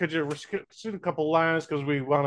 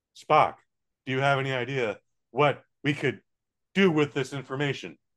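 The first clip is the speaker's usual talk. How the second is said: halting, dramatic put-on voice with pauses; 3 semitones lower than usual. Imitating a line read off a cue card: William Shatner voice with choppy pauses. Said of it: "a lot of choppy pauses for no reason".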